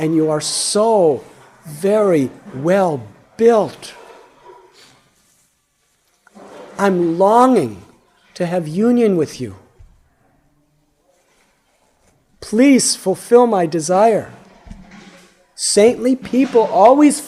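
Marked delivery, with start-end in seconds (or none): 0.0-14.3 mock-impassioned, acted-out passionate pleading. Retelling a woman's appeal to a saint, retelling an impassioned plea. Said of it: "in a very impassioned voice".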